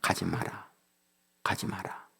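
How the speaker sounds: low, soft, hushed, stern voice.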